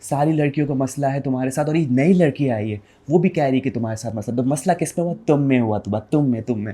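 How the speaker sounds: teasing, needling put-on gossipy girl voice. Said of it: "आप अच्छी mimicry करते हैं".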